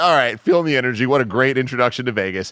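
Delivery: ordinary delivery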